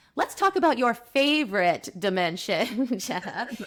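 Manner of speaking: knowingly ironic, dry sarcastic tone. Podcast host bringing the talk back with a question for Jenna, sarcastic. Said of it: "I hope everyone can hear my sarcasm".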